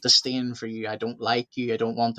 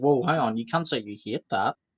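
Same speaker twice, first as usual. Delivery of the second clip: normal talking voice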